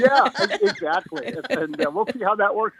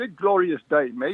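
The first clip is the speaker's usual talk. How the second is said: very bad put-on Australian accent; 5 semitones lower than usual. A guest on a phone call greets the host, in a very bad Australian accent. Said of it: "a very bad Australian accent anytime I say good glorious day".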